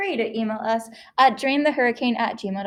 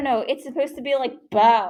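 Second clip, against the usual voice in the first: ordinary talk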